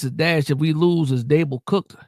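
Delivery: plain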